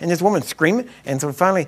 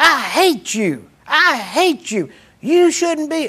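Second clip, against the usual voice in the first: put-on woman's scream, higher pitched; 9 semitones higher than usual. Retelling a woman who screamed during a prayer: imitating a woman screaming. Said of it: "started screaming".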